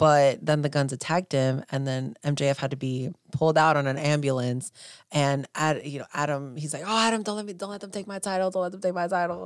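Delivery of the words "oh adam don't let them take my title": put-on overdramatic pleading tone, much higher pitch. Recapping a title match, the speaker acts out a plea: mock-dramatic plea. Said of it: "And they're so dramatic".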